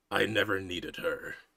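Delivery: growling character voice. Voicing Doc Simeon answering a taunt while being blasted by bullets: Doc Simeon growling. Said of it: "he just growls".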